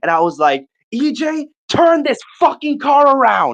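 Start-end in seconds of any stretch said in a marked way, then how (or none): 0.9-3.5 put-on very high, enraged yell, words stretched. Retelling demanding the car be pulled over: imitating his own furious shouting. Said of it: "I started kicking the back of his seat".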